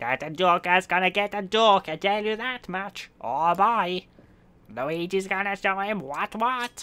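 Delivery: high, cartoony character voice. Told to drop the Batman voice, the speaker switches over: Luigi voice. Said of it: "You need to do the Luigi voice".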